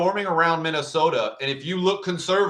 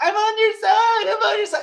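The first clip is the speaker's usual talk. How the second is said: shrill, very high, loud screaming; 5 dB louder than usual. Retelling a video of a beaten man pleading with his attackers: imitating someone screaming. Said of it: "and he's screaming".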